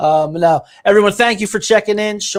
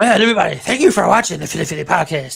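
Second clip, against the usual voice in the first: fast, creaky, rough cute voice, rattled off. Signing off the podcast when asked to: Adam Sandler voice. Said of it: "sign us off in your, like, cute little Adam Sandler fashion".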